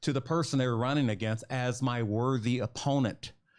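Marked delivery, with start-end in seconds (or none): none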